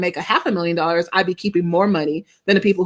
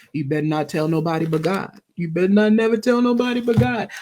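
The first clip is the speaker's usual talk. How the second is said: fast, menacing, threatening delivery. Describing how shame talks to her, the speaker quotes a film character: Mister from Color Purple voice. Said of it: "when Mister comes in and he goes".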